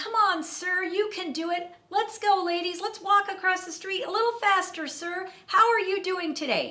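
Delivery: very high, enthusiastic, cheering calls. Retelling how a New York traffic cop moved people across, imitating an enthusiastic traffic cop. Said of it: "This woman was so enthusiastic about directing traffic".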